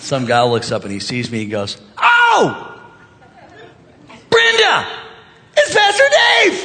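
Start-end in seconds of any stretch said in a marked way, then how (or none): 2.0-6.7 high, violent yell. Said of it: "such a violent yell".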